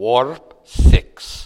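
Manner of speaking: put-on booming, very loud voice with Scottish accent. Telling a story about speeding, the speaker voices someone in the back; Scottish accent. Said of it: "A voice with a Scottish accent in the back says".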